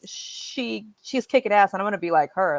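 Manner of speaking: normal talking voice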